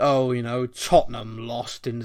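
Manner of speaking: mock gleeful, gloating, sneering reporter voice. Imitating top reporters talking about tottenham: sneering at tottenham. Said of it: "they almost swear our name sometimes".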